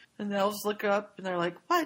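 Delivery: ordinary talk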